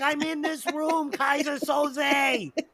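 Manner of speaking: high shrieking scream with one word drawn out. Acting out the suspect hiding in the bottom of the ship, retelling a scream. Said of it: "he's screaming it like".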